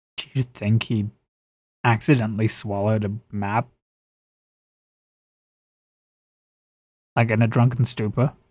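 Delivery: hushed whisper. During the game, a character whispers an aside to a companion, whispering. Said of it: "whispers in Draconic".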